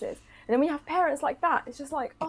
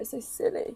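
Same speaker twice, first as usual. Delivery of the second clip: tearful speech while crying; 4 semitones lower, 5 dB quieter than usual. Agreeing about customers being mean: crying while talking. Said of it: "I shouldn't even be crying about it".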